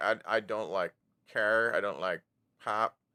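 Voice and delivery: ordinary talk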